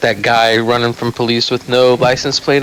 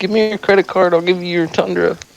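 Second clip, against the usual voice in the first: put-on high small child's voice; 7 semitones higher than usual. Imagining what a little kid would say to a friend, imitating a little kid. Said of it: "some little kid like".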